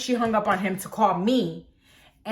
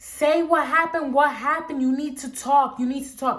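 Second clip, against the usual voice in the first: mock yelling, high and screamed; 6 semitones higher than usual. Retelling screaming at a panicking woman to say what happened; retelling a scream. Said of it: "So I scream and I'm like".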